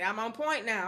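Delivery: plain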